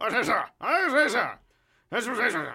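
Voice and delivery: shrill, very loud, high, repeated. Showing the voice tried for the old man during rehearsals: Anthony Hopkins voice. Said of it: "it was Anthony Hopkins as".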